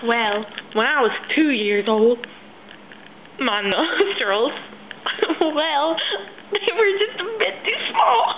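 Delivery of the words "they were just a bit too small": high, mock tearful crying, sniffling as if about to cry. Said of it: "I'm just tearing up".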